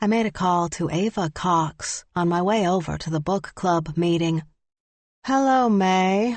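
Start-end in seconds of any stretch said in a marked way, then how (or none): 5.2-6.4 flat, toneless monotone, pitched high. Reading a story, a character greets the narrator on the phone: monotone voice. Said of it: "greeted me with a monotone voice".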